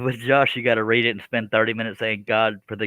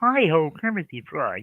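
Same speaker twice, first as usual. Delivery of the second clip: put-on puppet frog voice; 6 semitones higher than usual. Doing an impression for the others after asking for good impressions: Kermit the Frog voice. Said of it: "You know damn well that sounded like Kermit".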